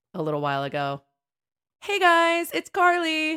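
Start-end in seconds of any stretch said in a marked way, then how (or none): 1.8-3.4 very high, stretched, drawn-out distant-sounding shout. The speaker recalls someone at a parade shouting to her, imitating someone shouting. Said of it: "somebody shouted out to me".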